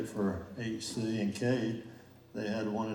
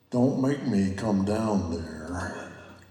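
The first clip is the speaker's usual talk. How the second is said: booming voice coming down from above; 2 semitones lower, 8 dB louder than usual. Asking what recorded conversations with God would sound like: God's voice. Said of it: "Or is it in God's voice?".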